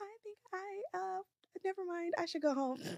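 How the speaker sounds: very high, very quiet, hushed, shaking quavering voice. Acting out own nervous self at events: acting out a shaking voice. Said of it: "Imma get my voice shaking".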